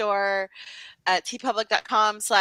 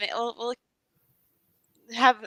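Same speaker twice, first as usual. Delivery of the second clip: voice catching mid-sentence. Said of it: "I'm just, like, choking here".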